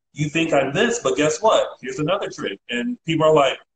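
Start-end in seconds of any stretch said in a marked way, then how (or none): none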